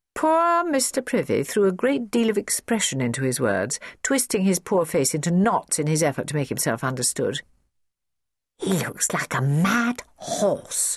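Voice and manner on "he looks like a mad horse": slow stage whisper. A child in the audience comments on the struggling speaker, whispering. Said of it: "whispered Jennifer".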